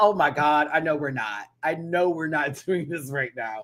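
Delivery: mock speech broken up by cackling laughter. Speaker recalls watching the show and reenacts their reaction, retelling own cackling. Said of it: "I was cackling like".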